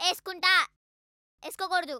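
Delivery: loud, rapid-fire, back-and-forth shouting.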